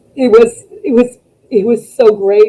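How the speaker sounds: overcome, choked-up, voice catching with emotion. Recalling a return that made the speaker cry all day: emotional, choking up. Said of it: "I'm sorry, so emotional".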